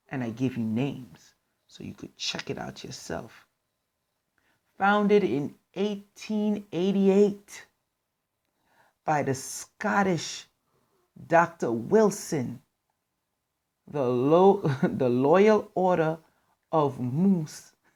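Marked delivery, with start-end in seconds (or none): 4.7-17.7 slow, held-back, stifled laughter while speaking. Reading a founding date and name aloud to listeners, holding back a laugh. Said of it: "I'm trying not to laugh".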